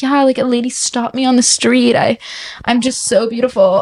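put-on vain, self-absorbed girl voice, preening and self-satisfied. Mocking how a self-absorbed girl would brag: imitating a self-absorbed girl. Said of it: "I sound like that girl".

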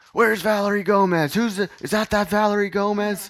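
mock drunken shouting. Retelling how a drunk guy at a party yelled a name: imitating a drunk guy yelling. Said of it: "he just yells".

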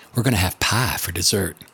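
imitated southern Virginia accent. Retelling what Grandma said about making blackberry pie: Southern Virginia accent. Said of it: "in her precious Southern Virginia accent would say".

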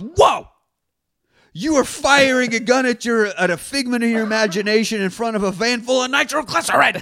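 high-pitched, scolding, stern schoolmarm tone. Recounting a movie fight, quoting Jim Carrey as he scolds Tyler, mock-scolding Jim Carrey impression. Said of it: "Really scolds him there".

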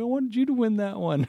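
put-on very high, loud, sobbing little-kid voice. Retelling how the kid reacted after losing a game: imitating a crying kid. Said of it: "And then he's crying".

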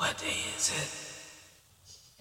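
acted very slow, out-of-breath, creepy, eerie whisper. Retelling asking a man in a crowded room, in a creepy, out-of-breath voice. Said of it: "It was like a creepy, like, I was out of breath".

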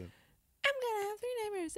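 terrible, badly done, very high-pitched cartoon voice. Retelling a cartoon episode, quoting the daughter: bad Lisa Simpson impression. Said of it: "That was terrible, Lisa".

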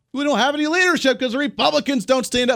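agitated, worked-up ranting, pitched very high. Speaker trying to breathe and relax while talking about Biden and Republicans, worked up. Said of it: "I need to calm down a little bit".

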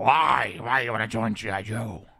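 low, gravelly voice dropped in pitch. Retelling a movie scene, answer Duke, who wants to join G.I. Joe, in a gravelly Quaid impression. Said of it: "That's my best Quaid in this movie".

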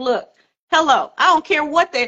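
mock, offhand, plain matter-of-fact tone. Praising a guest by imitating how she said it: imitating a matter-of-fact delivery. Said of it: "you just say it so matter-of-factly".

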